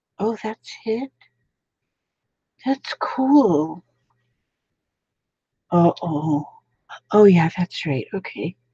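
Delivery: mumbling under the breath. Speaker, live, mumbling to the computer while setting up: mumbling. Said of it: "What you mumbling about?".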